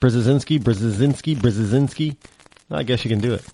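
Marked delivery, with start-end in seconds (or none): 0.0-2.2 very fast, rattled-off triple repetition. Taking up the challenge after spelling the name, say it three times fast. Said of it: "Try to say that three times fast".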